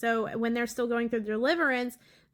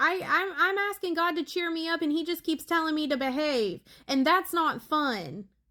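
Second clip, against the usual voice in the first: put-on high, tearful, whining little-girl crying voice; 5 semitones higher than usual. Retelling what a child said from outside the bathroom: imitating a child whining and crying. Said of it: "whining and crying and pitching a fit".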